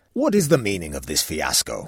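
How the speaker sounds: demanding, insistent voice. Narrator reading the king questioning the royal librarian, demanding. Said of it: "he demanded".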